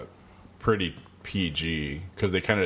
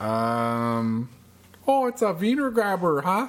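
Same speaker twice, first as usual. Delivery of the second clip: put-on Canadian accent; 13 semitones higher, 4 dB louder than usual. Asked by someone to do one, the speaker uses a put-on Canadian accent. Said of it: "Can you do a Canadian accent with it for me?".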